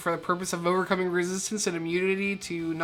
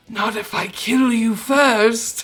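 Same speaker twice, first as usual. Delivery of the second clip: loud, booming, layered voice like two ghosts; 4 semitones higher, 7 dB louder than usual. Game master voicing a character after an intimidation check, in Clitoria Volvita's layered ghost voice. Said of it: "a layered voice that is of the ghost prince".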